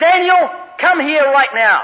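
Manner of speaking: stern angry voice. A parent recalling calling their young son over, retelling an angry call. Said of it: "with an angry voice".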